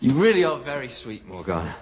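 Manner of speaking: laughing, words spoken through giggles. Arthur answers morgana's warning about her nightmare, laughing. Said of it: "Why are you laughing?".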